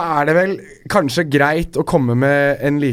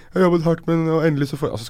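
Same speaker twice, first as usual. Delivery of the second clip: mock weepy, teary, hard-done-by crying complaint; 3 semitones higher than usual. Mocking the other speaker for crying in an interview: mock-tearful imitation. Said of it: "Imiterte du meg nå?".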